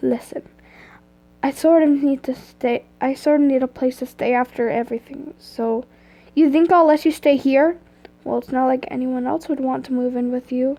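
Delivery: ordinary delivery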